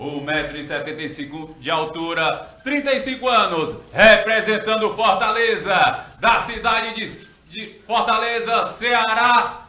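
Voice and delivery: loud, high MMA fight announcer voice.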